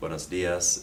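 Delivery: plain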